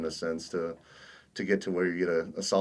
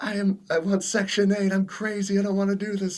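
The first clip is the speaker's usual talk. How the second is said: mock grown man screaming, high and loud; 6 dB louder than usual. Retelling a grown man in the doorway on the first night: imitating a man screaming. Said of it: "he was screaming, this grown man".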